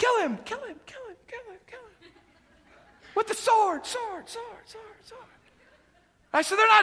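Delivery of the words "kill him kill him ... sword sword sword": soft, repeated half-whisper, words echoing away. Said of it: "try to whisper in a cave".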